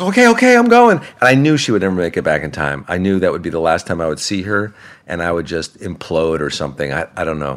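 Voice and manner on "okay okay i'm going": very high, raised, distressed, upset voice. Retelling her upset reply after being yelled at: imitating someone upset. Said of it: "she was so upset".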